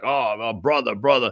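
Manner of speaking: mock chummy, low, folksy, evasive tone. Imitating how he addresses people while dodging: imitating a folksy dodge. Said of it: "he brings that low information stuff to you".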